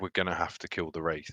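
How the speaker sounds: solemn in-character voice. Voicing a character saying what must be done, somber in-character tone. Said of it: "almost that tone".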